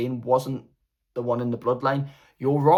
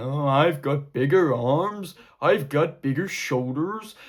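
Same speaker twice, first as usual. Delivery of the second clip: stilted, weird, awkward wrestling-promo boasting; 2 semitones higher than usual. Retelling an awkward wrestling promo, imitating Jade Cargill. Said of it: "It was just like Jade going".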